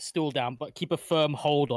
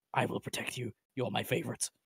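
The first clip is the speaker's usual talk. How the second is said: hushed whisper, lower pitch and quieter; 4 semitones lower, 8 dB quieter than usual. Speaking in character to a small creature before everyone shows up: whispering.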